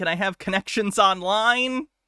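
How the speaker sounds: ordinary talk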